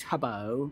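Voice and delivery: British accent on a name. Naming the best Minecraft streamer, say the name in a British accent. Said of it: "I can't say his name without the accent".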